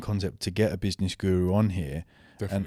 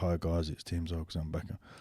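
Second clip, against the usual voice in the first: flat monotone delivery; 3 semitones lower, 7 dB quieter than usual. Recalling how he used to greet everyone when he first started, flat monotone delivery. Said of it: "I was very monotone when I first started".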